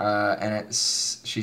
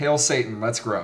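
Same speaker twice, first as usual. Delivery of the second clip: ordinary talk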